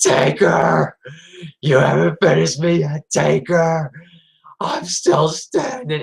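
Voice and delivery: slow, taunting wrestler-style voice, each word drawn out. Retelling a wrestler refusing to stay down after a match: Jeff Hardy impression. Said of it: "I remember in the voice, he says".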